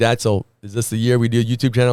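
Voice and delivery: ordinary talk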